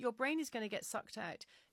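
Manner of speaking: mock light-hearted, jovial, joking, teasing tone. Retelling what a husband tells the kids: imitating husband's jovial tone. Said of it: "he says it in a kind of jovial way".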